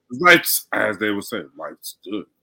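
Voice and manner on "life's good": soft, deep-pitched voice. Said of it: "In my future voice".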